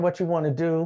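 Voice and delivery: ordinary talk, nothing marked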